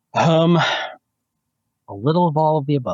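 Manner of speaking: slow, high, loud, facetious tongue-in-cheek tone. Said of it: "in a less facetious way".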